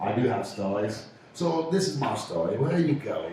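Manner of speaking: light Cockney British accent. Trying an australian accent for a story, slipping into a cockney british accent. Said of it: "I went from Aussie straight to British. I want a little bit Cockney".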